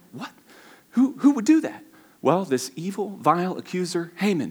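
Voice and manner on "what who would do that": very high-pitched, freaked-out outburst of disbelief. Retelling a story, acting out the king when he freaked out. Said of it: "King's freaked out".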